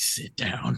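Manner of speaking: resonant, deep, bass chest voice, commanding. Retelling how Pat gets everyone to listen: Pat's chest resonance voice. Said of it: "he'd do that chest resonance and be like".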